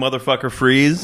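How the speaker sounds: ordinary talk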